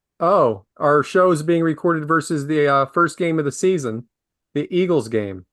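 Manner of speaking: ordinary talk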